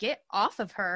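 ordinary delivery

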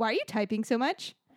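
put-on sharp, abrupt, snapping delivery. Retelling hearing her type instead of calling people; retelling snapping at someone. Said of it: "just like snapped at her".

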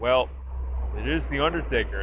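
play-acted dry, offhand, unbothered, matter-of-fact delivery. Retelling a trailer line, imitating Big E's dry nonchalant delivery. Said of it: "It's very dry".

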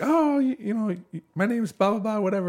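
put-on very high-pitched small child's chattering voice. Retelling how an old uncle played with a three-year-old, in a little kid voice. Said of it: "he's talking like a little kid".

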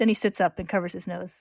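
plain reading voice

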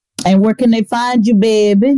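put-on New Orleans accent. Interviewer asking a business owner where people can find them, New Orleans accent. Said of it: "Using my New Orleans accent".

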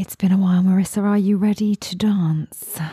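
sounding creepy. Asking someone if they are ready to dance, in a creepy voice. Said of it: "Why do I sound so creepy?".

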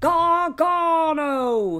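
put-on very loud, stretched, wrestling-style British accent. Mocking a wrestler's accent: Wade Barrett impression. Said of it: "Wade Barrett's accent".

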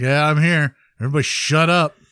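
put-on unenthusiastic, unexcited voice. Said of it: "As opposed to Joe, who feels like when he talks".

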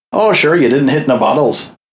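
terrible attempt at Irish accent. Retelling a character's dialogue from a game played through, bad Irish accent. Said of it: "my terrible attempt at an Irish accent".

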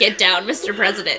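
normal talking voice

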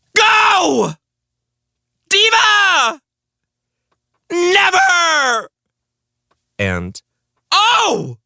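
very high, slow, swooping, drawn-out screams. Presenting nominees for Best Word to Scream: screaming. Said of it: "the nominees for Best Word to Scream".

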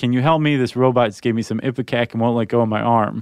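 ordinary talk, nothing marked

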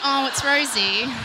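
ordinary talk

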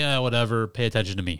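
plain

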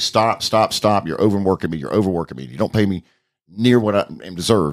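normal talking voice

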